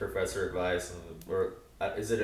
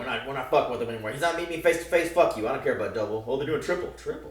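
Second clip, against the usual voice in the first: play-acted fuming, heated, stressed-out outburst; 4 semitones higher than usual. Retelling a TV character's angry outburst at the cops: imitating someone fuming. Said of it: "He's steaming".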